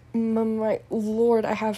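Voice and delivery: stuttering, stammering words. Narrator reads a young Death Eater's words to the Dark Lord, stuttering. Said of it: "The young Death Eater stuttered".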